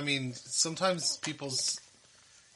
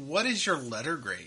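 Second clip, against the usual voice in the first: ordinary talk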